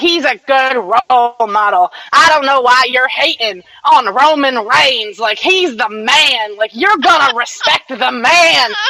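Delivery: bad Southern accent. Speaker voices people in the back-and-forth bickering, in a really bad southern redneck voice. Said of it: "I'm intentionally doing it in a really bad southern redneck voice".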